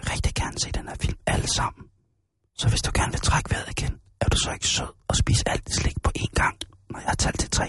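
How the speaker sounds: menacing, breathy, hushed whisper. Speaker shows how he whispers to people in the cinema, whispering. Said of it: "så visker jeg sådan her til dem".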